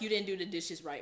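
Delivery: put-on angry voice. Retelling what he would say when angry: imitating an angry scolding. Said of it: "He'd be angry for no reason".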